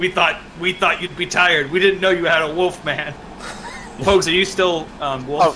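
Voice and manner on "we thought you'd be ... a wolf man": nervous, anxious voice. A captured soldier, hands bound, answers his captors: nervous, sweating captured soldier. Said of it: "In front of him is both a man wearing the crown of his former king and a man wearing the armor of / and he sort of like his hands are bound behind him, / he's just sweating and looking nervous".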